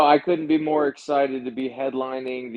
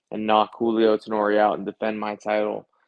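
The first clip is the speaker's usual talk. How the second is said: plain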